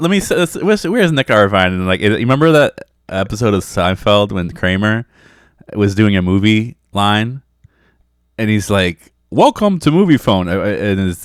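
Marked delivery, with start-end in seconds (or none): 9.3-10.5 put-on automated phone system voice, pitched up. Recalling the Seinfeld episode where Kramer runs a movie line: Kramer's fake automated voice. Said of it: "and he's trying to sound automated".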